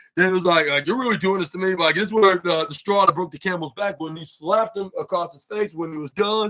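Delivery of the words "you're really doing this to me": fed-up, ticked-off, angry, pushed-too-far retort. Retelling a wrestler's reaction to being scolded: imitating a ticked-off wrestler. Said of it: "Mark Davis then was very ticked off".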